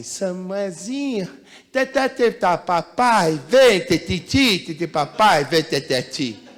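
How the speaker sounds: put-on very slow, drawn-out, cooing toddler baby talk. Showing how a father talks to his child, the speaker uses baby talk. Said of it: "Você acha que eu estou falando com um adulto ou com uma criancinha?".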